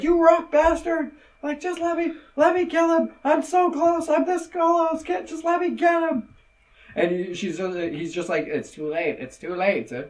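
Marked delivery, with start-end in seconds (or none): 0.0-6.3 put-on shrill, furious, high-pitched scream. Retelling a scene where she gets yanked away by Zeke, retelling a scream. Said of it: "she's screaming at Zeke".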